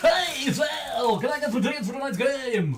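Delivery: put-on radio announcer voice, pitched very high. Retelling a man phoning for game tickets: his radio announcer voice. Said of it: "still use his radio voice".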